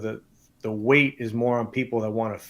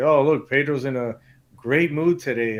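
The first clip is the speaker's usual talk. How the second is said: mocking, heavily sarcastic, teasing tone; 3 semitones higher than usual. Quoting the more extroverted ones teasing him, mock sarcastic remark. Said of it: "all sarcastically".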